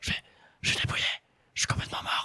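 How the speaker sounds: quiet, hushed stage whisper. Retelling his answer to a tv interviewer after a race, retelling a whispered answer. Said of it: "Je parle vraiment comme ça".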